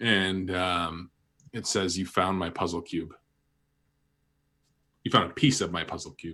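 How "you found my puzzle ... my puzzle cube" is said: whisper, much faster pace. Voicing a voice from the tablet that only one player can hear: whispering voice. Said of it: "a voice whispers into your ear".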